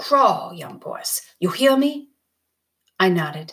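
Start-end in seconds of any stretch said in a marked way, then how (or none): 0.0-2.1 voice thick with anger, climbing in pitch. A man warns the young boys, his voice thick with anger. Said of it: "His voice was thick with anger".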